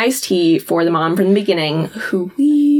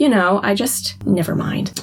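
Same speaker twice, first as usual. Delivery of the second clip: normal talking voice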